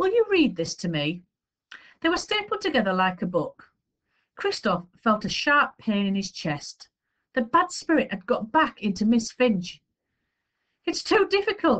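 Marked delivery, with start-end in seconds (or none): 10.8-11.8 crying out with voice very high. Christophe, asked by Miss Finch to read to her, crying out. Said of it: "he cried".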